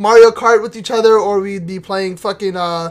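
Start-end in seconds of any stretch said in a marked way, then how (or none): none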